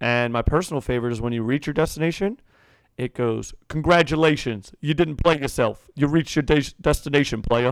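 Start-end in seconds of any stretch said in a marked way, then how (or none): 3.7-7.7 voice like a sat-nav announcer. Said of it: "You sound just like him".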